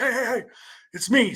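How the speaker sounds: gentle called-out voice. Retelling a hunting scare when a friend answered: imitating a friend yelling back. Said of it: "Brian yells back".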